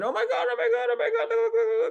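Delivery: mock very high, shrill scream in fright. Retelling how people used to react to scary things: imitating someone screaming in fright.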